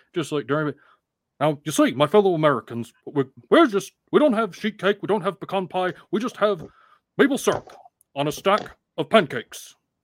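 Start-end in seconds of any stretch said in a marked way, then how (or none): 1.4-9.8 high-pitched, orating stump-speech politician voice. Bringing up the listener's Bernie Sanders impression, then performing it: Bernie Sanders impression. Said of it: "your impression of Bernie Sanders".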